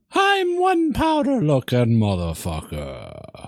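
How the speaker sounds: attempted Irish accent. Trying a line again after being coached on it: irish accent. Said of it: "You kind of got Irish there".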